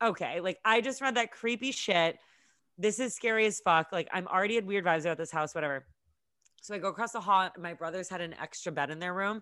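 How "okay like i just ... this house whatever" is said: usual speaking voice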